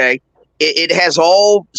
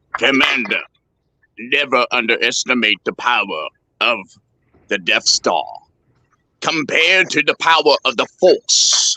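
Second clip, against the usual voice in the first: dropped low, nasal villain voice; 5 semitones lower, 3 dB quieter than usual. Answering a challenge to show he can sound like Darth Vader: Darth Vader voice. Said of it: "You don't have that James Earl Jones voice".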